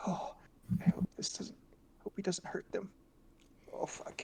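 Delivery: very hushed whisper under the breath. Acting out a character talking to himself: whispering to himself. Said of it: "I'm gonna be whispering".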